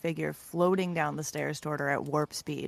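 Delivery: ordinary delivery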